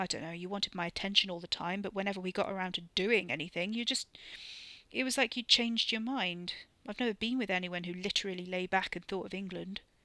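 ordinary talk

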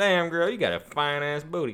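put-on southern drawl. Trying out a line with a brought-back southern twang. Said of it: "if I brought back the southern twang".

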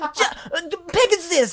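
very high, drawn-out, grating, irritating voice. Imitating a cartoon character's line: annoying Gingka voice. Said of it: "the most annoying voice possible".

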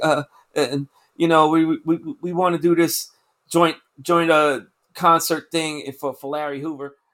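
defeated, low, deflated, sad mumble.

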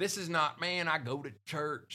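put-on light country accent. Talking about response to Jesus, voicing a churchgoer in a country accent. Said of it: "I don't know why I'm doing a country accent right now".

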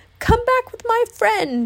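very high, shrill shouted cry. A stilted creature hobbling after fleeing friends calls them back, shouted. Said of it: "shouted the stilted Spookable".

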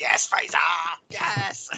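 put-on, excited, hyped-up cheering voice. Imagining an excited friend rubbing the listener's shoulders: imitating Danny cheering excitedly. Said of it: "rubbing you on the shoulders, like".

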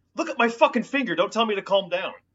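very high-pitched, shrill screaming. Retelling a man yelling at the guy telling him to calm down, imitating someone screaming. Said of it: "when he's screaming".

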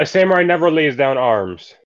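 loud called-out voice. A samurai answers a guard's order to lay down arms, yelling out. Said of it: "I yell out".

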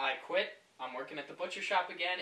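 soft, totally unbothered, even-keeled calm delivery. Retelling a friend's phone call about quitting his job: imitating a very calm tone. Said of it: "he said in the most calm way".

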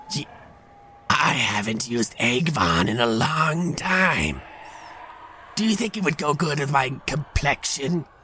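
eerie, high, ghostly banshee woman voice. Voicing a ghostly banshee woman asking about Avon: ghostly banshee woman voice. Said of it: "a banshee, was a ghostly woman ... She goes".

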